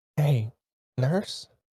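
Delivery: subdued, careful, gentle, low-key voice. Player's character slowly sits half up and calls the nurse, very quiet. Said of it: "just very quietly say".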